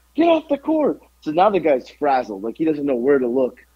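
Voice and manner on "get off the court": high-pitched, screaming yell. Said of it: "I'm just screaming at him".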